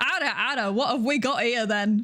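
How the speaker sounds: put-on Yorkshire accent. Doing the owed Ara Ara line in an accent: Yorkshire accent. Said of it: "the iconic Yorkshire Ara Ara".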